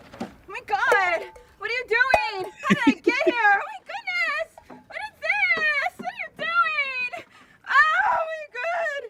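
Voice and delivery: frantic babble, very high and climbing in pitch. Waking up somewhere strange and freaking out. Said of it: "she freaks out".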